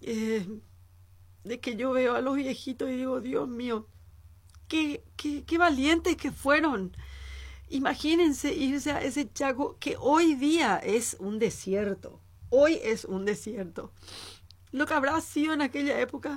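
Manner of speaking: moved, emotional, on the verge of crying. Apologizing to the audience for getting emotional about the old Chaco veterans, speak emotional, close to tears. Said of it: "Me emociono, gente, perdón".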